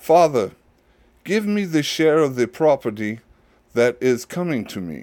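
put-on light, kind of British accent. Reading aloud the younger son's request to his father: kind of british accent. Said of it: "his younger son had a kind of British accent".

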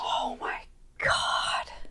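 soft, unvoiced, exasperated whisper in disbelief.

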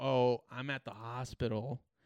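put-on slow elderly man's voice. Retelling a phone call from a trailer seller: imitating an old man. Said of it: "Clearly sounds like an old man".

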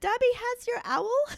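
very high, squeaky little elf voice. Retelling a scene where the house elf answers someone asking who's there, squeaky Dobby voice. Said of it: "Dobby's squeaky voice".

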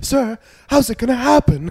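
very high, loud theatrical stage projection. Retelling how high schoolers questioned the filmmakers, theatrical stage voice. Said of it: "They're all using theater voice".

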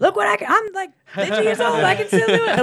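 put-on hyped bragging voice.

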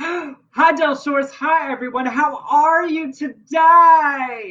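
very slow, high, overacted fake enthusiasm. Greeting the co-host and viewers in a rehearsed performance: forced enthusiasm. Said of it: "that was such forced enthusiasm".

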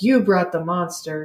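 put-on character voice, yelling. Retelling a movie scene where he starts yelling at her: imitating a character yelling. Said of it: "starts yelling at her".

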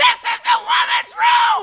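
shrieked, very high, furious scream. Telling a story about a restroom confrontation, acting out a woman's scream. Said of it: "she screamed".

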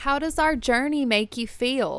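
put-on Texas accent. Reading Miriam's question aloud in a role play: Texan Miriam voice. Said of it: "Texas Miriam".

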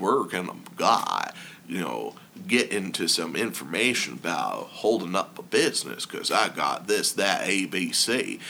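smooth, refined, suave, sophisticated voice. Imitating customers who come into the bar and buy a drink, suave, sophisticated voice. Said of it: "they talk in their suave, sophisticated voice".

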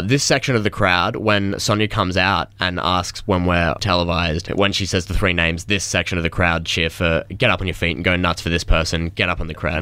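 plain

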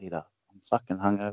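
soft, hushed half-whisper under the breath. Acting out an imagined hungover line to Peter: acting out a half-whisper. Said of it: "Just whisper".

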